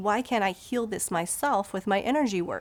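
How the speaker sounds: normal talking voice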